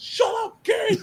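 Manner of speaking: very high-pitched yell. Quoting a favorite movie line where he yells at kids: imitating a yell at kids. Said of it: "when he yells at the kids".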